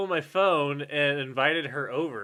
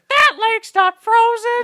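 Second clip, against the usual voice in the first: put-on very high-pitched, very loud girl voice; 9 dB louder than usual. Retelling what a visitor said on seeing the lake: imitating her voice. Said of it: "I don't know how to do her voice".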